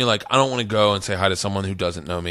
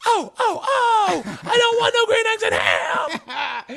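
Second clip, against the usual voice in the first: very high, slow, swooping comic voice, drawn out. Showing how Green Eggs and Ham would sound, as a Sam Kinison impression. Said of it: "like Sam Kinison".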